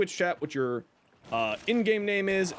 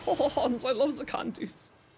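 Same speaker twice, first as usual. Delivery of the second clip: weird fake quasi-German accent, pitched up; 5 semitones higher than usual. The speaker slips into a weird quasi-German accent while talking about candies. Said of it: "a weird quasi-German accent".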